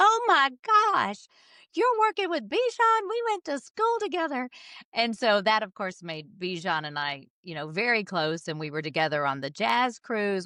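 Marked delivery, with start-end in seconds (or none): 0.0-4.5 very high, put-on Southern accent. Quoting a sister's phone call about a musician, imitating her southern accent. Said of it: "in her southern accent".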